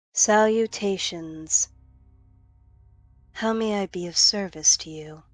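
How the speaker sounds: otherworldly supernatural entity voice. Voicing a summoned winged entity greeting the players: voicing a winged robed entity. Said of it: "And the figure speaks to you".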